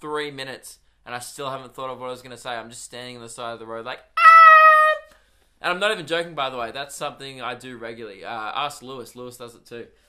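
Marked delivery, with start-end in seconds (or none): 4.0-5.1 shrill, very high, loud, drawn-out um. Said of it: "in a really high-pitched voice".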